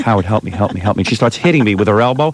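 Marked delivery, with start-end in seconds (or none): 0.0-1.0 put-on hushed under-breath whisper, much lower pitch. Describing how a woman begs for help ordering, retelling an under-breath whisper. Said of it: "She whispers under her breath".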